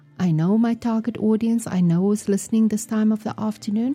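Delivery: normal talking voice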